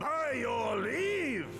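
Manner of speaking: huge, booming, thunderous loud voice. Announcing arrival at the Rising Stones: booming loud voice. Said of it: "that voice could fell a gigas".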